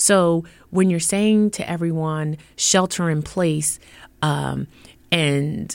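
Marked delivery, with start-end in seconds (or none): none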